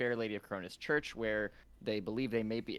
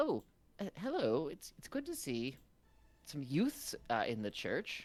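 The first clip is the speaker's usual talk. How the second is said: put-on elderly woman's voice, high and swooping; 5 semitones higher than usual. Voicing an older woman greeting visitors in a church: older woman character voice. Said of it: "an older woman. She's dressed very properly".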